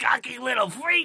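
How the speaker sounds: put-on very high, shrill, loud, thick broad Boston accent. Describing a game villain, the speaker quotes him in a thick Boston accent. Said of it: "the thickest Boston accent".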